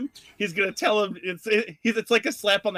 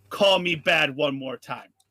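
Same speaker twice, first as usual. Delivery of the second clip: menacing tone, much lower; 4 semitones lower than usual. A player's character holds a glaive to the shopkeep's throat; Tick's menacing threat. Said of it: "move the glaive to literally half an inch from the shopkeep's throat".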